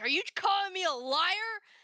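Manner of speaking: mock very high, in-your-face screaming. Retelling an angry man without movie tickets yelling at the speaker: retelling a scream in the face. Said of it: "He is screaming in my face".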